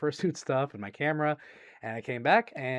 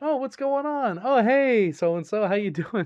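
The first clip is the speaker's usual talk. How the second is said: put-on breezy, easygoing casual voice, pitched up; 9 semitones higher, 6 dB louder than usual. Retelling walking upstairs after hearing someone come home: imitating own casual tone. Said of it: "I walked upstairs all casual".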